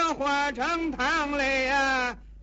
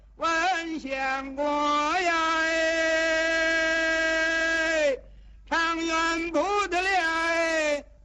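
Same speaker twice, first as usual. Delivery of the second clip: high, slow, drawn-out, far-carrying vendor street cry. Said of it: "顺着风儿这一嗓子能听半里地去".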